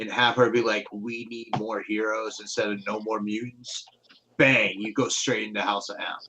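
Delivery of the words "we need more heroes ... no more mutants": normal talking voice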